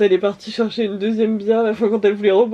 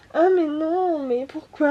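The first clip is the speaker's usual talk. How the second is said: put-on high-pitched, drunk, babyish talk; 7 semitones higher, 3 dB quieter than usual. Retelling how a very drunk woman talked: imitating a drunk baby voice. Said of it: "une voix un peu en mode baby".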